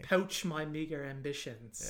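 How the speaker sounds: bad, terrible put-on British accent. On a podcast, quoting a line in a terrible british accent. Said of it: "That's my terrible accent".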